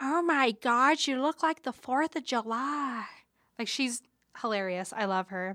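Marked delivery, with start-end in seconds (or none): 0.0-3.0 "July" drawn out in a rough voice. Retelling an awards show moment: horrible Jennifer Coolidge impression. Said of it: "that was a horrible impression".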